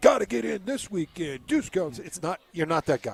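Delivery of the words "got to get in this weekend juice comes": blowhard, big-voice announcer hype, pitched up. Mocking pushy car ads: imitating a big-voice blowhard. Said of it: "sound like the big voice guy".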